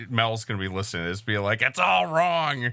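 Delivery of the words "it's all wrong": riled-up, cross, high angry complaining voice. Imagining a listener reacting to the explanation: imitating angry Mel. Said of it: "that was just angry Mel".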